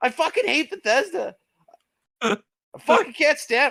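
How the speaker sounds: furious, enraged outburst, voice cracking very high. Ranting at bethesda fans about the company, angry with voice cracking. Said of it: "my voice is cracking".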